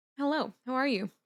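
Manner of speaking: chewing while talking. Greeting viewers while covering mouth: chewing while talking. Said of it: "I'm chewing and covering my mouth".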